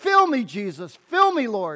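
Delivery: swooping, sing-song, churchy praying delivery. Telling of a churchgoer who stood up every week, praying in a loud voice. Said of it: "pray in a loud voice".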